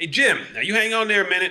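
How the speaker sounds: high-pitched, loud holler. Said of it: "So I hollered, I said".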